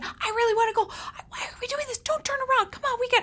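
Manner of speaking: very high, rushed whisper-yelling. Retelling how they talked to him on the way home, whisper-yelling. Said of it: "I'm like whispering, yelling".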